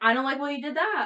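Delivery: high-pitched, loud, heated, argumentative voice.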